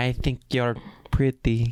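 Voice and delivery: put-on, halting, broken foreign English. Acting out a pickup line in put-on broken English. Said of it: "Chicks love broken English".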